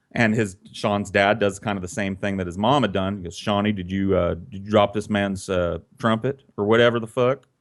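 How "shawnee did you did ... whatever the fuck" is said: normal talking voice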